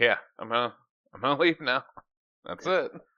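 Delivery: put-on blank, emotionless voice, no reaction. Retelling a scene with a character who has no reaction: imitating an emotionless character. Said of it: "he has no reaction to really much of anything".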